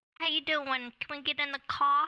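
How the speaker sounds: put-on non-rhotic accent, r dropped, "car" said "ka". In a disguise skit, trying a new voice after coaching, dropped-r accent. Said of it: "Instead of car, say ka".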